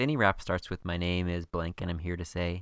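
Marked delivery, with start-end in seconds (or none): none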